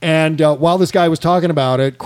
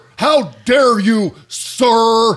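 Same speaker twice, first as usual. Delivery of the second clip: put-on outraged pundit voice, higher pitched; 6 semitones higher than usual. Mocking a guest from a news clip with a Keith Olbermann impression. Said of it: "That's my Keith Olbermann impression".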